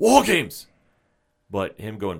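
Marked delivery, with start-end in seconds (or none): 0.0-0.7 very high, loud calling out. Imitating a match being announced: William Regal voice. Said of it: "you know I love hearing William Regal go".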